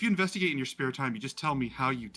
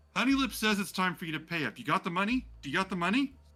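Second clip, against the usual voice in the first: pitched-up, demanding street thug voice; 6 semitones higher than usual. Voicing someone in an alleyway who demands money: thug demanding payment. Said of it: "you hear this voice that goes".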